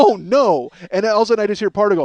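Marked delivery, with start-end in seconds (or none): 0.0-0.7 mock aghast, horrified gasp of dismay, raised. Retelling a shocked reaction in a quiet theater: imitating own horrified reaction. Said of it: "horrified me to the point where I went".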